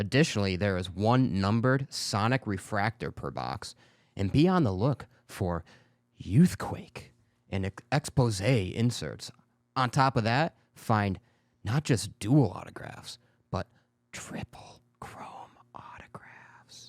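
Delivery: seductive, sexy delivery. Reading out details of a new trading card release on a show, seductive reading. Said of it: "You sounded really seductive when you were trying to read that".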